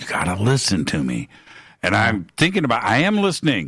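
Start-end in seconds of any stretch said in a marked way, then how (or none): 0.0-1.3 hushed, confiding leaned-in stage whisper. Retelling how an interviewee leaned down toward the camera: imitating a half-whisper. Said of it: "starts to whisper".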